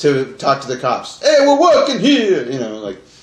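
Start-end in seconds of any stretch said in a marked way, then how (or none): 1.2-2.5 put-on loud, very high-pitched New York accent. Imitating an actor talking to cops in the movie: Dan Aykroyd's put-on New York accent. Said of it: "He has to turn on a New York accent".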